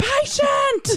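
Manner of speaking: shrill, very high, loud scream. Joking about answering a patient's screams for nurse: pretend loud scream. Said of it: "answer screams for nurse with an equally loud scream".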